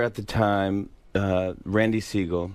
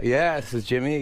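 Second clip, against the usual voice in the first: ordinary delivery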